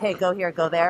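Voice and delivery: ordinary talk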